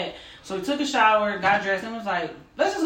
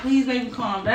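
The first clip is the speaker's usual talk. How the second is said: imitated tearful, crying pleading tone; 2 semitones higher than usual. Retelling begging a furious partner, imitating own tearful plea. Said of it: "I started crying".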